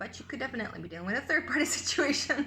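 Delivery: talking with laughter breaking in through the words. Speaker delivering the Spirit's message, laughing while talking. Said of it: "Sorry that I'm laughing".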